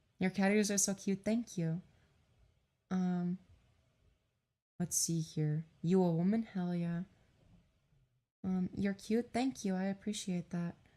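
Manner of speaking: quiet, soft put-on girl voice. Reading chat messages aloud: quiet put-on girl voice. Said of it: "it's easier to do a girl voice".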